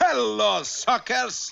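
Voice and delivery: bright, cheerful, loud cheery voice. Narrator voicing a stranger hailing Rocky and Bullwinkle from the shoreline, in a cheery voice. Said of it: "they were hailed by a cheery voice".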